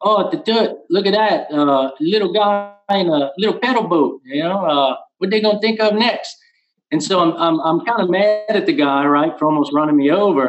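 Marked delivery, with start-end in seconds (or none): 0.0-6.4 put-on thick Cajun accent laid on heavy, pitched up. Retelling what a man said to his wife while nearly running him over: thickest Cajun accent. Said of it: "in the thickest cajun accent".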